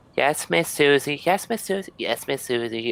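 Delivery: put-on string of high, different children's voices. Voicing a group of kids answering their teacher: many different kids' voices. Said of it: "All these different".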